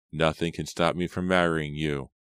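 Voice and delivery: ordinary talk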